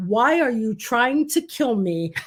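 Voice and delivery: ordinary talk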